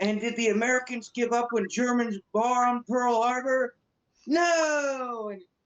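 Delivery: very high screaming rant with drawn-out "no". Retelling a movie scene speech, imitating a yelling speech. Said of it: "he's yelling and screaming".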